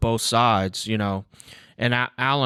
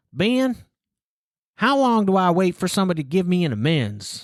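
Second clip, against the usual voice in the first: put-on really heavy Southern accent, swooping; 8 semitones higher than usual. Quoting a former client's question to him, in a heavy Southern accent. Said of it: "really heavy Southern accent".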